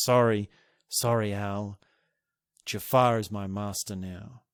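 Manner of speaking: put-on sad, slow voice. Describing a film scene, quoting the Genie: imitating the Genie, put-on sad and slow. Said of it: "he's got a sad face, he talks very slowly".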